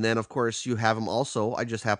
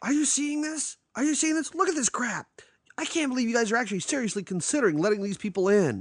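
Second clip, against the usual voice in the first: put-on yelling rant, pitched higher; 13 semitones higher than usual. Retelling a movie scene where a school head yells at staff: imitating Christopher McDonald yelling. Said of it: "he's yelling at these people".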